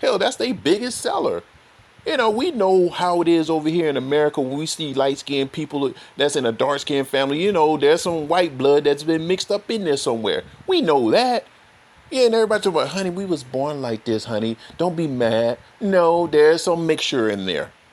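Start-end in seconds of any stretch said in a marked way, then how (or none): 12.9-15.6 mock condescending tone. Imitating people who say they were born like this: mocking a condescending tone. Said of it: "All condescending like shit".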